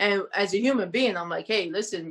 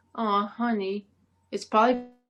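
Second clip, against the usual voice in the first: sweet, sugar-coated, doting fatherly voice. Retelling what the speaker's dad said after a job loss, mimicking his sweet tone. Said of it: "in a sweet tone".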